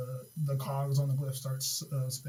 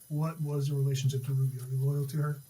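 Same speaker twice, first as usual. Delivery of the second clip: ordinary talk, nothing marked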